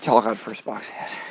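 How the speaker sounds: mock-disappointed tone. Mimicking another player's reaction to the first box hit, mock-disappointed. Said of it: "why do you sound so disappointed?".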